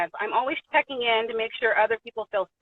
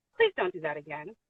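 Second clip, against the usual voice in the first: acted, soft, eerily calm and creepy voice; 6 semitones lower, 6 dB quieter than usual. Retelling what a man told the speaker before a show: imitating a calm, creepy voice. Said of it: "calm, but weird as, weird, like, creepy".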